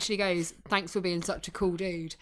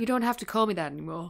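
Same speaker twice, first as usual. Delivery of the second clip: bad, awful, fake American accent. Retelling a TV scene, quoting a character: bad American accent. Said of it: "My American accent, it's awful".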